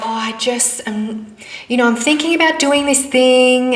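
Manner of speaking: hesitant, strained, dull, unsure, slightly high voice. Speaker demonstrating how someone sounds when not confident about their plans, dull, unsure voice. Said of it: "hear in my voice that it doesn't sound like".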